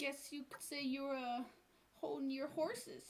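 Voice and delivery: soft, quiet mutter under the breath. Voicing a character who looks around and mutters a pun: under her breath. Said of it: "under her breath, she kinda goes like".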